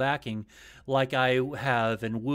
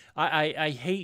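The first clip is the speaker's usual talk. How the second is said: plain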